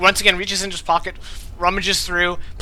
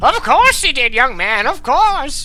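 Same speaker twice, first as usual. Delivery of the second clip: put-on loud, high-pitched, aged old-timer voice; 7 semitones higher, 5 dB louder than usual. A character unconscious the whole time finally speaks up, in an old voice. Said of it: "you hear this old voice".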